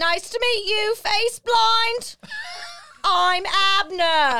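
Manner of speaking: put-on British accent. Voicing Abner in the narrated scene as he introduces himself, Abner in British accent. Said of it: "And that's my British accent".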